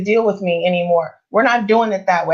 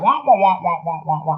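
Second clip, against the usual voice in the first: cartoon adult wah-wah voice, much lower; 4 semitones lower than usual. Describing what empty talk sounds like, doing Charlie Brown's teacher voice. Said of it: "like Charlie Brown's teacher".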